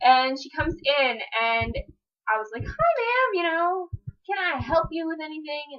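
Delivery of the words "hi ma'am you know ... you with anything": high, cheerful, upbeat voice. Retelling greeting a lady who came into their store, put-on cheerful work voice. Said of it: "In my Ricky's cheerful voice".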